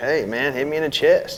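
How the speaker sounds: ordinary talk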